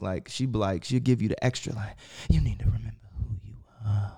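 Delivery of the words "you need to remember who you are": creepy, breathy put-on voice, much quieter. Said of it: "You sound like a walker from Walking Dead".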